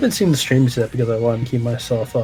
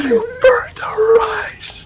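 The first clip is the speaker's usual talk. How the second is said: mock screaming. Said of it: "Screaming, just like".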